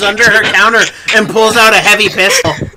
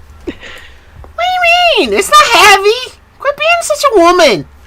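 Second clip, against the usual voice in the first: voice rising higher and higher in pitch. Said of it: "Your voice is getting higher and higher pitch".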